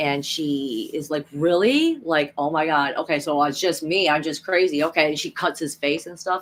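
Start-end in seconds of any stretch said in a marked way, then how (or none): none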